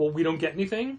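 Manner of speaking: normal talking voice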